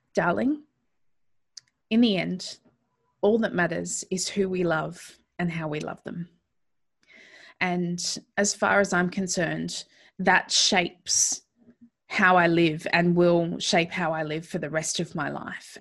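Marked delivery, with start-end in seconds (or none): 0.1-6.3 fighting back tears. Recalling what a grandmother said after a death: fighting back tears. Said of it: "I'll try to say this without crying".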